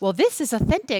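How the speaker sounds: put-on influencer voice, lilting up, fake upspeak, rising endings. Mocking food influencers who call places authentic: imitating influencer's fake upspeak voice. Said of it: "it uses that fake voice".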